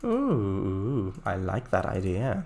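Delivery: very deep, swooping, lingering creepy voice. Planning a railway layout, reacting to an idea in a creepy voice. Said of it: "I said in a not at all creepy voice".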